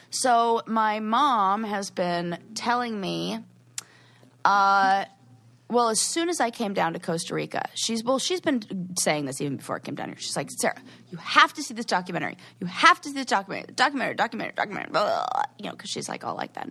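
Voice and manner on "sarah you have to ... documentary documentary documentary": higher, mock insistent, pushy voice. Imitating the speaker's mom urging her to watch a documentary: insistent. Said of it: "she's very insistent".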